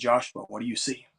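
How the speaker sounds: soft, hushed, barely-there half-whisper. Retelling hearing a voice while looking at a mirror: imitating a half-whisper. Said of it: "heard the same voice whisper back and say".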